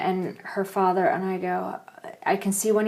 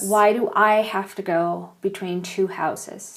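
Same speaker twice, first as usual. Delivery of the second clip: ordinary talk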